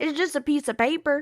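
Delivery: mock rural country accent. Repeating an old remark against getting married, in a country accent. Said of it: "In my country accent".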